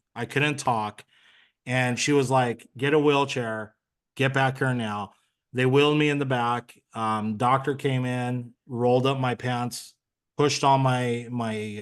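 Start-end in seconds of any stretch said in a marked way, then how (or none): none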